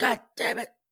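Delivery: put-on furious whisper, cracking, angry cursing. Retelling a viral video of an old man who cracked: imitating a man cracking in anger. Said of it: "he was like".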